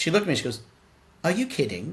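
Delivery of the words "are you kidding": woman's put-on English accent. Retelling her reply to an offer of regular talks: english accent. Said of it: "she's English. That's how you sound".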